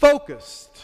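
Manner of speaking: ringing, high, loud, sudden preacher-style cry.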